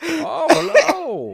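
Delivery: put-on very high-pitched voice with English accent. Describing how Bane sounds in the movie, imitate him in a high-pitched English Bane voice. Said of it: "this high pitched English voice".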